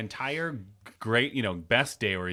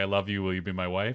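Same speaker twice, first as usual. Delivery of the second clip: mock sarcastic, facetious tone, lower; 4 semitones lower than usual. Retelling how a character in a movie proposed: imitating a facetious proposal. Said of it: "very facetiously was like".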